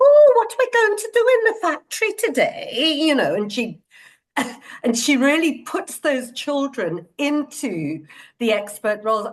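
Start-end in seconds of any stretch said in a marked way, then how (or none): 0.0-3.0 put-on unassuming, gentle northern British accent, pitched very high. Act out Dorothy Heathcote talking to the children, as a Dorothy Heathcote impression, northern British. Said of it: "she's this unassuming northern British lady, and she sort of talks like that".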